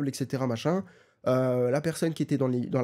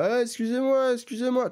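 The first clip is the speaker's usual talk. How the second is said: put-on woozy, unhinged, tipsy-sounding voice, very high; 9 semitones higher than usual. Retelling a neighbor calling out from his door: imitating a neighbor who sounds drunk. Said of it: "il parle un peu comme ça".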